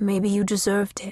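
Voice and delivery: voice growing quiet. A man, phone in hand, sighs and answers a woman her mother slapped, voice growing quiet. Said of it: "his voice grew quiet".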